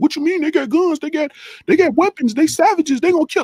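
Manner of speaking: very high, fearful fretting, acted out. Speaker mocks what timid people say first, imitating a scared person.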